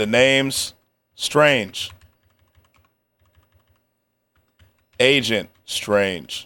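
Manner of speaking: over-the-top dramatic movie-intro voice, deep and slow. Acting out a character's intro, marked deep voice: exaggerated deep voice. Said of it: "Deep voice".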